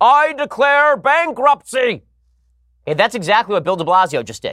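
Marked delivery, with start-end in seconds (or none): 0.0-2.0 very high, blurted shout. Making a comparison, the speaker imitates Michael Scott shouting in the middle of the office. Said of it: "He just gets up in the middle of the office and shouts".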